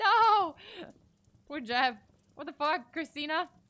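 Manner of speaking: high, loud shocked outburst.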